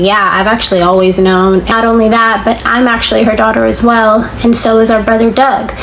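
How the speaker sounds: ordinary talk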